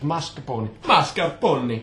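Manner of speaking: put-on Italian accent on mascarpone, said twice. Right after apologising for it, slip back into a put-on Italian accent. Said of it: "it's back already".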